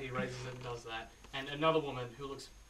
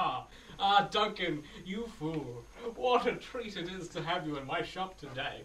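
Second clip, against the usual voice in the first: cackling voice; 3 semitones higher, 4 dB louder than usual. Voicing a shopkeeper greeting duncan in the shop: cackling shopkeeper. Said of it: "He just cackles".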